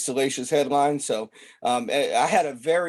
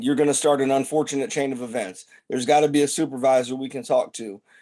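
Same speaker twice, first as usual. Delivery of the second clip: ordinary delivery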